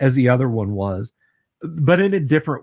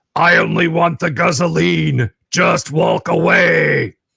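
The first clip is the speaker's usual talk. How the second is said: harsh, grating, metallic machine voice through loudhailers, pitched up; 5 semitones higher, 4 dB louder than usual. A narrator voices an endoskeleton synth speaking over loudhailers, in a grating metallic voice. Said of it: "in this grating metallic voice".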